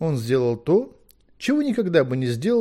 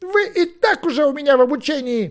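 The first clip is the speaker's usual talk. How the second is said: very high, barked, snapping tone; 12 semitones higher, 4 dB louder than usual. Merlin answers someone begging to be his apprentice: barking. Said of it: "рявкнул Мерлин".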